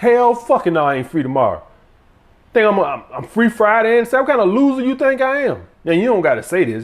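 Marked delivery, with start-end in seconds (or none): 0.0-5.6 mock aggressive, belligerent tone, pitched up and rising. Acting out turning down a woman's new date: aggressive refusal. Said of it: "You sound like you're getting aggressive".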